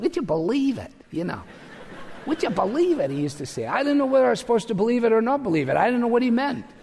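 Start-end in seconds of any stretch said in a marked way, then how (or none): 0.0-3.1 put-on Cleveland-accented speech. The speaker quotes an older man friend's cliche, in a Cleveland accent. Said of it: "in a very sort of Cleveland voice".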